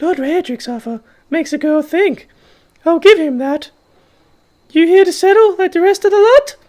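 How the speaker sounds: shrill, very high, loud put-on woman's voice. Voicing a woman character's lines: put-on female voice. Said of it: "I'm not going to keep doing that voice".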